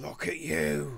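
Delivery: put-on low, soft, creepy woman's voice. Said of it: "Oh, it got worse".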